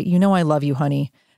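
ordinary talk

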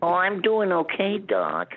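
very high, sing-song, swooping, drawn-out cartoon rabbit drawl. Answering the retold question as Bugs Bunny: Bugs Bunny voice.

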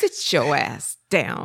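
grandmother voice, every word drawn out slowly.

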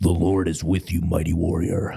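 gravelly, creaky wrestler voice. Acting out the angel's greeting to Gideon, Macho Man Randy Savage voice. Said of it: "I'm going to say it like this / you sounded like Macho Man".

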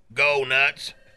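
ordinary delivery

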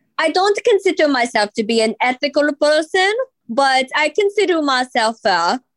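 mock Italian accent drifting toward Slavic and Mexican.

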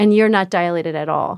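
ordinary delivery

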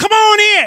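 very high, loud, eager, enthusiastic calling out. Calling them over to come here, with an enthusiastic call. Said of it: "you call them with enthusiasm".

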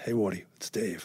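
put-on soft, casual voice with New England accent. Retelling a phone call from the guy who ran his old club, imitating David Ray's New England accent. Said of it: "New England accent".

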